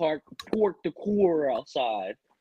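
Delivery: slow, drawn-out, put-on Los Angeles accent. Kicking off the episode, the speaker switches into an la accent. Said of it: "I'm about to do this episode with an LA accent".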